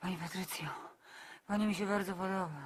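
very deep, low, murmured, seductive voice. Imitating how an actor tells a woman on screen he likes her, Karol Strasburger murmur. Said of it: "on to z siebie wymrukuje".

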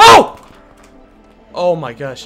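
frightened scream. Streamer exploring a game turns around and mistakes something for a creeper: frightened scream. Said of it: "I'm sorry for that scream".

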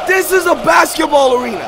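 loud, high, hyped yelling.

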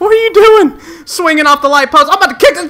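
high, loud, gleeful excited yelling.

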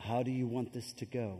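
close, leaning-in, very hushed half-whisper. Showing how children get corrected in public: imitating own half-whisper. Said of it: "I whisper".

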